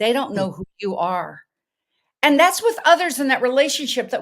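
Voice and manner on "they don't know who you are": put-on Norwegian accent, lower pitch. Retelling what the mother said after an accident: Norwegian accent. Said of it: "in her Norwegian accent".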